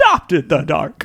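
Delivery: menacing movie villain voice. Talking about the Dark Knight trilogy, quoting the villain's line in a Bane voice. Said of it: "that's what Bane forever talks like".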